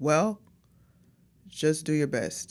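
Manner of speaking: disappointed, let-down fatherly tone. Retelling a father's reply on the phone: imitating a disappointed father. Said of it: "he sounded so disappointed on the phone".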